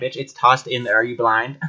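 normal talking voice

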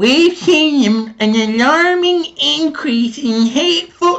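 very high, very slow dumb cartoon kid voice, "seen" drawn out. Quote Cowart's statement from yesterday in the stupidest voice possible, almost Cartman. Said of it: "I gotta use the stupidest voice I can".

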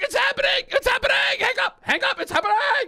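acted very loud yelling. Speaker retells finding someone in the house, retelling a loud yell. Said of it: "I yell it really loud".

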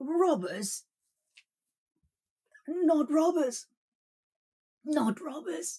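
high, panting gasp of sheer terror. A terrified man answers the soba peddler's question about robbers: terrified gasping. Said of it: "gasped the terrified man".

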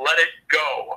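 very stern, severe, grave tone, no room to argue. Speaker lying under a car retells a voice warning him, retelling a very stern voice. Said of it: "I hear a very stern voice go".

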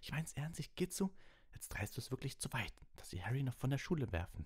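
seething, angry hissed voice. Reading a character rebuking a classmate over a friend, hissed angrily. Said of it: "zischte Ron wütend".

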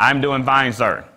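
loud, slow, drawn-out called-out reply. Showing how an inmate answers an officer's question: imitating an inmate yelling. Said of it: "this person yell out loud".

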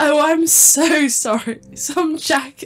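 high, very slow speech with laughter breaking through. Reading a text message line aloud with the other player, unable to stop laughing. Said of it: "I can't stop laughing".

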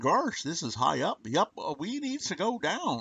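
goofy, sing-song hayseed voice with swooping pitch. Gripping a railing far above the ground, speaking in a Mortimer Snerd voice. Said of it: "saying in my Mortimer Snurd voice".

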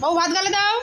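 loud, high-pitched delivery.

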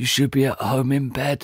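whispered voice. A narrator reads the father, trapped in wreckage, speaking to his son, whispered.

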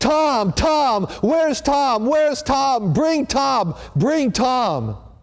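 play-acted, very high, shrill, drawn-out top-of-lungs scream. Retelling what a nurse said a dying patient screamed: imitating someone screaming. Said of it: "he screamed at the top of his lungs".

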